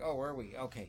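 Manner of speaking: ordinary talk, nothing marked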